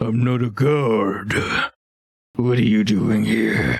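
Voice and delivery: drawn-out, very slow ogre voice. Voicing a suspicious ogre questioning the players: voicing an ogre. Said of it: "He narrows his eyes and says".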